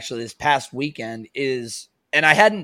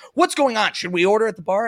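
high, frantic, flustered, panicky voices; 8 semitones higher than usual. Retelling customers asking about bar service: imitating frantic customers. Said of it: "they start being frantic about".

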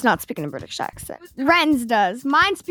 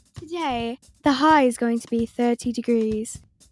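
put-on British accent. Imitating another person's voice assistant: imitating Alexa in a British accent.

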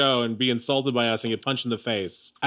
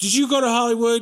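very high, legal-thriller narrator voice; 10 semitones higher, 4 dB louder than usual. Retelling a television interview, imitating the interviewer Charlie Rose. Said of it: "I don't know why I'm saying it like this".

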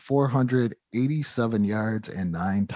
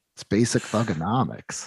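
mock dead straight face, serious, no laugh. Retelling a coworker's reply to a question, imitating a dead straight face. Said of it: "looked him dead in the face with the straightest face".

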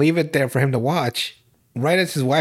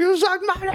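put-on screaming, higher pitch. Retelling a movie scene: imitating Keanu Reeves screaming. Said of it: "Just hear Keanu Reeves scream".

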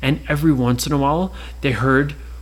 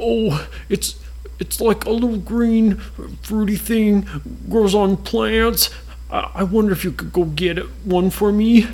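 put-on high-pitched small dragon voice, congested, sounding poorly; 6 semitones higher than usual. Narrator reading a children's story voices Marsh, a sick little dragon. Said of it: "And they had met a marshmallow dragon there. ... "I have a dragon cold." / And it looks just like a marshmallow. ... Oh, poor little [name]. / and he was crying. / "I have a dragon cold."".

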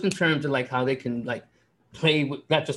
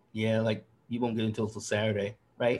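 mock under-breath mutter, lower and quieter; 3 semitones lower, 5 dB quieter than usual. Retelling what a man said under his breath, imitating someone muttering. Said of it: "it was all under his breath".

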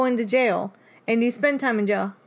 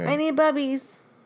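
mocking voice, higher; 3 semitones higher than usual. Retelling a line that used to annoy, imitating her annoying catchphrase. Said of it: "She'd be like".

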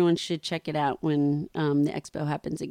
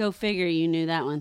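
ordinary delivery

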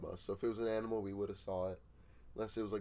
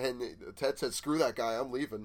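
usual speaking voice

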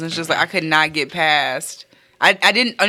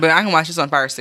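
normal talking voice

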